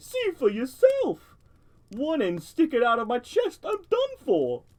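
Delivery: thin metallic tin-toy voice. Narrator reading an unseen forager's reply, tinny voice. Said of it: "came the tinny reply".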